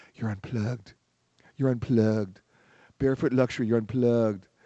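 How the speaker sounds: airy, breathless, quick patter. Imitating how they say it at Kona Village, in a breathless way. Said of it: "I'm going to say it the way they would say it in a very breathless way".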